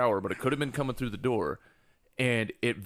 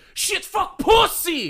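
very high, very loud, shrill, frustrated yelling burst; 9 dB louder than usual. Retelling how she cursed when she got frustrated, imitating a frustrated yell. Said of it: "she got frustrated and she just yells".

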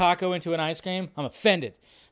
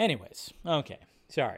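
ordinary talk

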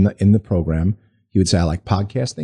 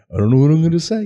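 high-pitched cartoon bear voice; 8 semitones higher than usual. Recalling an office colleague unsure what to say at their first recording, Yogi Bear voice. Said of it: "he's on like Yogi Bear".

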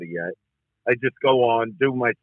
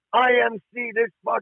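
play-acted screaming, words slowly dragged out; 10 semitones higher than usual. Speaker retelling a club run-in, quoting the guy, imitating someone screaming. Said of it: "He's screaming".

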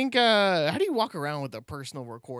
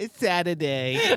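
goofy, dopey pop-star voice; 4 semitones higher than usual. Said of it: "That's my impression of [name]".

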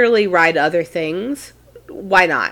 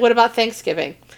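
usual speaking voice

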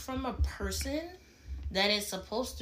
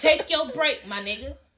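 aggressive, forceful, higher and louder; 3 semitones higher, 8 dB louder than usual. Telling a partner how to take a break: aggressive. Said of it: "Why you so aggressive?".

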